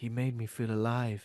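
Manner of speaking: slow, drawn-out lady's voice. Joking about a possible voiceover in a story; Marie's voice. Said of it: "I'm doing lady's voice".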